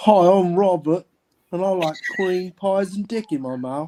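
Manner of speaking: put-on British accent. Asked by the others to do an English accent, [name] speaks in an English accent. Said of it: "Hit us with an English accent".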